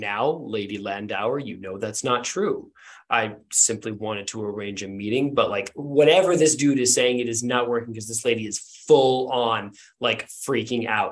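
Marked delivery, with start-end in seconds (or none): 0.0-5.4 put-on, soft masculine voice. Describing a recording, voicing the man answering a lady who is freaking out, masculine voice. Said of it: "the masculine voice say like".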